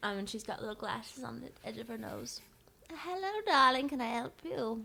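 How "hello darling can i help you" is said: put-on high, elderly woman shopkeeper voice. Voicing a shopkeeper greeting customers at her stall: old woman shopkeeper voice. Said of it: "She's an older woman".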